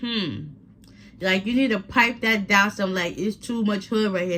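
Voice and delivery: ordinary talk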